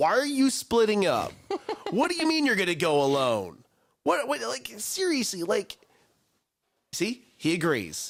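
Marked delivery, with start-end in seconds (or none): 0.0-5.4 high, swooping, hollering yell. Talking about dumb horror movie characters, act out yelling at the tv. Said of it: "I am yelling at the T V".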